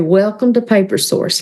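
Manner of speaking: put-on Southern accent. Recalling being hired as a store door greeter, say the welcome in a southern voice. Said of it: "with a Southern voice say".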